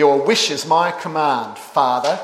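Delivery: sardonic, sneering, mockingly deferential tone. Showing ways a phrase to a father can be said, giving the sarcastic example: sarcastic. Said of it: "used in a sarcastic way".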